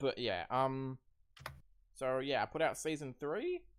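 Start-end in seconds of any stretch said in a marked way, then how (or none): 2.4-3.6 voice cracking, jumping up high partway through. Catching the others up in a group conversation, the speaker's voice cracks. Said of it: "There was a voice crack there".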